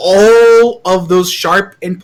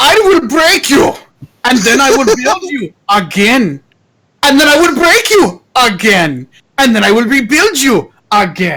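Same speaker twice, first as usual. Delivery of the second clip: put-on Eastern European accent, pitched up; 3 semitones higher than usual. Voicing a character greeting the new blood, in an eastern european accent. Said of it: "that accent is it like Eastern European accent".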